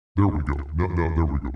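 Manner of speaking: very low, very deep, filtered voice-changer voice. Switching a voice filter back on, speaking in a very deep voice. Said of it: "Very deep, very real, very human".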